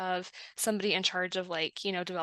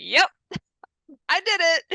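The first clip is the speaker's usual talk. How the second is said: high, loud, cheery, proud. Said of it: "be like".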